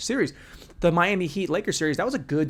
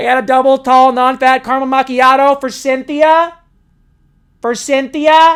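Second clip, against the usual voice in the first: very high, very loud call-out voice; 9 semitones higher, 15 dB louder than usual. Mocking how their own voice sounds: Starbucks barista voice. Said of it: "I sound like I work at Starbucks".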